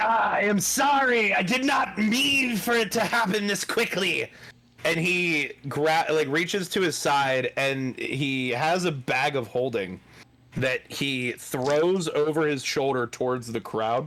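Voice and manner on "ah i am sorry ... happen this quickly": high, full-throated yell at maximum volume. Voicing a cursed character crying out to the crowd: shouting at the top of his lungs. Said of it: "you hear him shout, basically at the top of his lungs".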